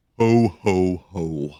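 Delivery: deep, low, festive voice on "ho ho ho". Asked by the host for a ho ho ho, Santa gives a deep Santa ho ho ho. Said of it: "I gotta use my deep voice".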